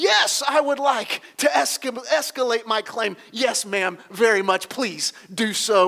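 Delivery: strained, exasperated, frustrated but polite tone. Retelling a phone call to escalate a claim, imitating frustrated politeness. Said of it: "with frustration in my voice, trying to be as polite as I can".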